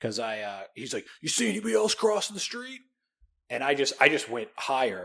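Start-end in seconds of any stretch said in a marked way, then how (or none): 1.2-2.8 acted very high-pitched screaming. Retelling a street crossing where a cop stopped them: imitating a cop screaming. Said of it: "the cop screaming at me".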